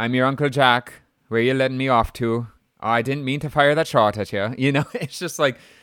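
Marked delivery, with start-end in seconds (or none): 0.0-4.5 put-on Irish accent, higher pitch. Discussing an actor's weird accent in a film, imitating his Irish accent. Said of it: "Here's my Irish accent".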